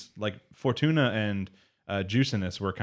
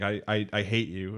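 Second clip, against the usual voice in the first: put-on crying voice, much slower pace. Recapping a scene's ending, imitating Echidna crying a little. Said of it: "real sad, like crying a little bit".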